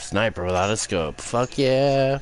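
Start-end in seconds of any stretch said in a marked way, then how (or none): 1.2-2.2 high-pitched, sarcastic cheering tone. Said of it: "That's sarcasm".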